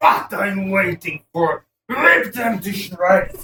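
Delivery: slow, loud, furious yelling like a battle cry.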